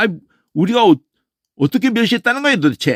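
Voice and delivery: high, combative, quarrelsome, fight-picking tone. Showing an intonation that sounds like someone picking a fight, quarrelsome tone. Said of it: "아이 시비를 거시네 이분이 이런 식이야".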